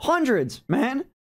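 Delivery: high voice, breaking and cracking. Telling about getting care to hundreds of people: voice cracking. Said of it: "my voice is cracking".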